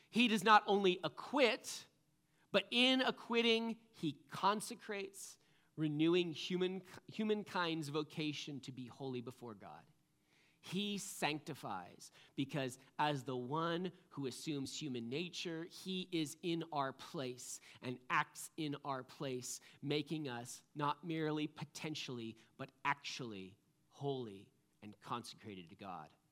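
slow, read-aloud pace.

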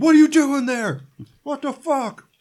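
very high, shrill, crazed, freaked-out yelling. Retelling a scene where a character yells at a mannequin: imitating a character yelling. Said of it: "he's just yelling at Fred the mannequin".

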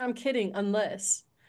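ordinary delivery

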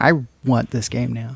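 plain

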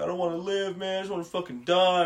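put-on words breaking through high sobs. Retelling a story, the speaker acts out a man crying by a payphone: imitating sobbing. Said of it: "He's like crying by the payphone".

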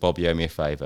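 ordinary talk, nothing marked

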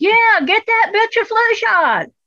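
casual, hollered, yelling voice. Describing a doctor answering a nurse across the room, retelling his yell. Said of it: "And he yells".

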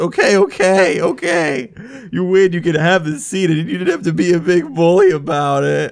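sniffling, high, loud, tearful sob-talk. Game narrator voicing a punched man giving up his seat, crying and sniffling. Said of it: "He's crying, and he kind of sniffs".

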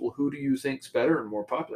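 ordinary talk

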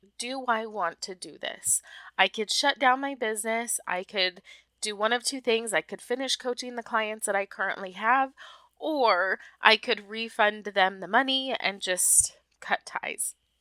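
ordinary talk, nothing marked

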